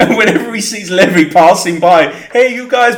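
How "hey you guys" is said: higher, put-on Italian accent. Describing a character in the basement who calls out to Levy: Italian accent. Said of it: "but in an Italian accent".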